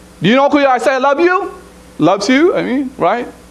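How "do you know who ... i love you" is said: put-on accented English, pitched up. Speaker repeats what the wife told jj at the table, imitating wife's accent. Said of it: "That's how she said it, with an accent".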